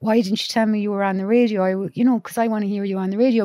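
ordinary talk, nothing marked

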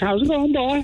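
bad, appalling put-on Cork accent, very high. Retelling meeting a girl, speaker quotes her in a bad Cork accent. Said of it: "here's this girl with a Cork accent".

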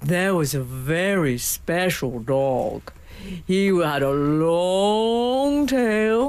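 very slow, consonants and vowels long and drawn out. Imitating a man's special dog intonation, with stretched-out consonants and vowels. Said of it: "He uses what he calls a special dog intonation. ... He extends all his consonants and vowels".

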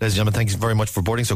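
rattling through very fast, rapid-fire. Speaker imitates a man giving a boarding announcement, rattling through it fast. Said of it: "He rattled through it".

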